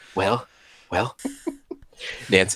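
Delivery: put-on voice of an old president. Trying out the Ronald Reagan impression the listeners know: Ronald Reagan impression. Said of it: "our Ronald Reagan impression".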